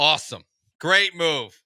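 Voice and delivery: dry mocking sarcasm. Reacting to news of a baseball team's trade interest: sarcastic. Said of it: "Is that sarcastic?".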